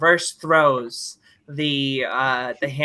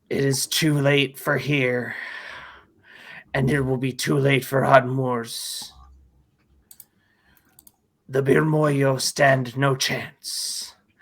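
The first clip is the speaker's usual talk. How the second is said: deep, rumbling, grumbling giant voice. Narrating a scene, voicing a character holding a drill: deep, low, grumbling tone. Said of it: "in a deep, low, grumbling tone".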